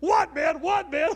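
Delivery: very loud, high, play-acted terrified, frantic shouting. Retelling how his roommate reacted to a sudden scream in the night, imitating petrified panic. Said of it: "his roommate was petrified too".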